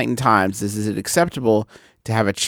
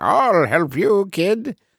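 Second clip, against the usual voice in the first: old-fashioned, old-timey put-on voice, much higher; 8 semitones higher than usual. A dad in a fake mustache serves a kid at the counter, in an old-timey voice. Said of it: "kind of like an old timey voice".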